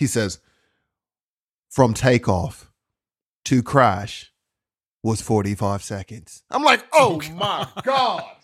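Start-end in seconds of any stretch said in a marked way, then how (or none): 1.7-6.4 very low, flat, monotone documentary narrator voice. Quoting the narrator while recounting a crash, monotone narrator voice. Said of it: "the narrative is really like monotone".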